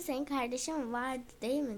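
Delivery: ordinary delivery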